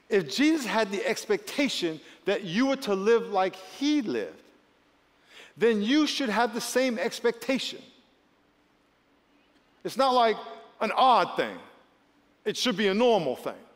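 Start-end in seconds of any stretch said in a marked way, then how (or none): 0.1-7.8 slow, deliberate, weighted for emphasis. Repeating a point again so the listeners can marinate, slow for emphasis. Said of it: "say it again slow for emphasis".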